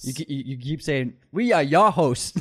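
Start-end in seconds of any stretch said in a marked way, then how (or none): 1.3-2.4 put-on strong, slow Boston accent on your, R dropped. Imitating the co-host's intro line: imitating a boston accent on "your". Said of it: "like a super Boston accent on the your".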